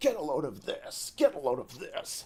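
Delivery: swooping, pitch-swinging villain voice. Describing the Sonic Adventure final boss: Eggman impression. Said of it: "Eggman impression".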